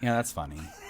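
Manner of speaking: put-on flat lifeless voice. Retelling how Kevin reacted to an edit: imitating a flat, zero-energy voice. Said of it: "zero energy in his voice".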